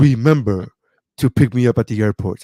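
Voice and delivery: put-on, regal, majestic lion voice. Retelling a comedian's bit where his father leaves a voicemail: Lion King voice. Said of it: "his dad sounds just like the Lion King".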